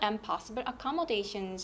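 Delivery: intonation drops on the word "accommodations". Korean lesson on listing three nouns, the last item: falling pitch on accommodations. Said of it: "이렇게 하면서 억양 내려갑니다".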